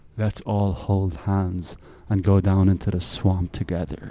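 low, sultry, put-on seductive voice. Quoting a sarcastic line about the left: put-on sexy voice. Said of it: "I said that very sexily too".

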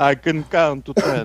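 character impression, laughing. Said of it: "I am the Count from Sesame Street".

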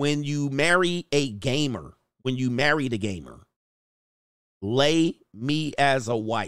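ordinary talk

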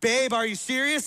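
full-on mad, angry yelling outburst. Showing how a wife sounds at the angrier level: imitating someone yelling.

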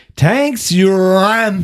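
put-on loud, slurred, slow drunk drawl, ram drawn out. Retelling what a drunk girl said taking her food: imitating a drunk voice. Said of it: "He was doing a drunk accent".

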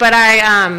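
usual speaking voice

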